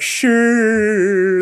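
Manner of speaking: play-acted, high, drawn-out, unconvinced "sure". Imitating an uncle replying to something unbelievable: imitating uncle's disbelieving "sure". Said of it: "something he really didn't believe".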